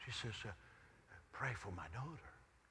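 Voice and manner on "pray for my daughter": confiding, very hushed voice, low. Retelling what a lady in the lineup said, retelling a super hushed tone. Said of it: "begins to speak in a super hushed tone".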